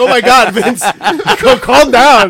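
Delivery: loud, high, laughing panicked pleading.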